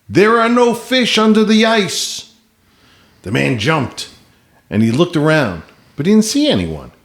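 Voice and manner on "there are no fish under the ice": acted, very high, booming call. Telling a joke, a voice shouts at a man cutting into the ice: booming shout. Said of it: "heard a booming voice shout".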